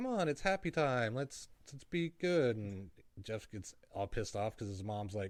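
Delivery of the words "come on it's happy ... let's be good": very cheerful, sunny, high-pitched voice. Retelling a mom coming into her son's room and opening windows, imitating a cheerful mom. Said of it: "just all like happy as can be".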